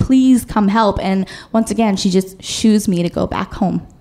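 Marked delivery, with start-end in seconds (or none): 0.0-1.0 crying, tearful, breathless pleading voice. Retelling knocking on a neighbor's door for help: retelling a crying, breathless plea. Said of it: "I'm crying, and I'm huffing and puffing".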